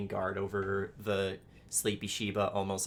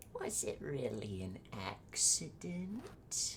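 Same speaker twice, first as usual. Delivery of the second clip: put-on eerie, soft, swooping old-woman voice, close; 4 semitones higher, 6 dB quieter than usual. Describing a cold hand on your shoulder, then a voice in your ear: old lady's voice. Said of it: "an old lady's voice in your ear just goes".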